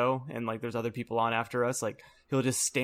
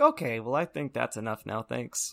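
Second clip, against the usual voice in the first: dead straight, dry, deadpan delivery. Retelling how he put out his hand to stop the slapping, imitating his deadpan voice. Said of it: "in his deadpan voice".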